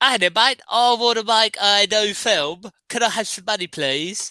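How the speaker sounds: put-on New Zealand accent. Imagining Peter Jackson walking in after Bad Taste, Peter Jackson in Kiwi accent. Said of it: "That's my uh, new Kiwi accent".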